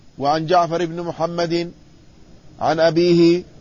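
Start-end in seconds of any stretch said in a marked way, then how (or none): none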